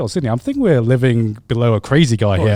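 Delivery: ordinary talk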